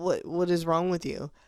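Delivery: normal talking voice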